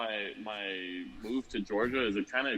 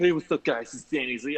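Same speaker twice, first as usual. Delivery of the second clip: loud, belted-out delivery; 5 semitones higher, 6 dB louder than usual. Describing watching Danny's videos, imitating Danny Z's video intro. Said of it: "every time I look at Danny's videos and he's like".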